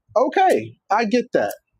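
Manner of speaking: play-acted tart, drawn-out delivery. Retelling own reply to an angry friend: imitating own tart reply. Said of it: "That was a little bit tart".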